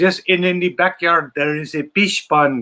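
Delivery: heavy put-on Filipino accent, laid on thick. Retelling a visit to her uncle's house, quoting the wife: imitating wife's thick Filipino accent. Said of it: "my wife had this really thick accent".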